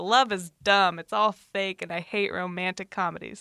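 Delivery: ordinary talk, nothing marked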